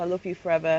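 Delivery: ordinary talk, nothing marked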